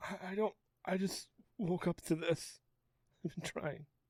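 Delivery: whispered, stumbling, very soft, breathy words through sobs. Asked who is in charge of the town, a character answers, crying. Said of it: "He's crying".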